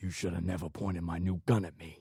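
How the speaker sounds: menacing, hissed voice. Reading a story line a man says into Phil's ear: hissing. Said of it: "the hat hissed into Phil's ear".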